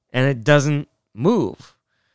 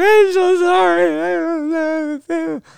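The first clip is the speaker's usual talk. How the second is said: put-on high-pitched sobbing, sorry drawn out. A streamer retells apologizing to a man whose window got hit, re-enacting crying while apologizing. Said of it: "I'm just crying, going".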